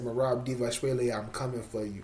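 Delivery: normal talking voice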